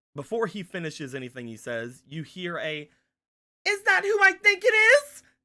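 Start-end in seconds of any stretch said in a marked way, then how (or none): 3.6-5.2 very high, very loud, shrill, piercing cry. Storyteller voicing someone calling out from just ahead, shrill voice. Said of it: "a shrill voice seems to come from".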